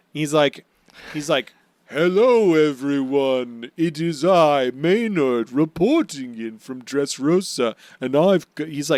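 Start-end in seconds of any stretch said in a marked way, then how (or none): 1.9-8.6 slow, drawn-out, grand, regal, pompous bloviating voice. Retelling a character's video announcement: regally bloviating Maynard voice. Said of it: "really bloviating".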